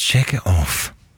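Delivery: disappointed. Asked to say a phrase as if disappointed: disappointed. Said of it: "Say it like you're disappointed".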